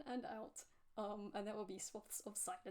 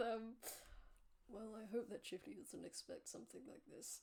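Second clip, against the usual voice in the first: muttered under breath, much slower. Narrating a game scene, voicing Lao after a stealth roll, muttering under his breath. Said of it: "He mutters under his breath".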